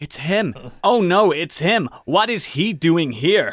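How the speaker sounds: very slow, loud, badly dubbed American voice acting. Imitating a tv show's crap american dub voice actors. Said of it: "dubbed with really crap American voice actors".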